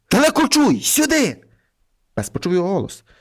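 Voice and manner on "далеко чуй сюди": high, all-out shout at full force. As a bear climbs the oak toward him, a boy calls his dog, shouting with all his might. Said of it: "Хлопець усієї сили закричав".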